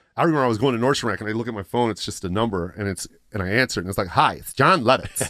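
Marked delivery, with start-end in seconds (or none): 4.1-5.3 slow, drawn-out delivery. Retelling a phone call from a comedian: Jon Lovitz impression. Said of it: "I used to impersonate him".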